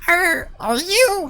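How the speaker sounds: shrill, very high, loud little pixie voice. Voicing a pixie who narrows his eyes: pixie voice. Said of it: "that's the voice I wanted".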